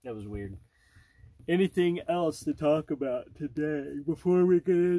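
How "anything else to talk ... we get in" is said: spoken through a yawn. Speaking to a co-host before a taste test, yawning while talking. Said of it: "sorry, I'm yawning".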